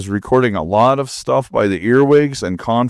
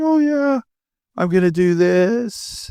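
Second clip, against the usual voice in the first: voice breaking and cracking, pitched up; 9 semitones higher than usual. Speaker talking about a hard time, voice cracking. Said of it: "my voice is cracking".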